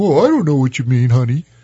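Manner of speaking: goofy, dweeby, dorky husband voice. Describing how wives imitate their husbands, the speaker demonstrates the dork voice of a husband. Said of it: "they always use the dork voice".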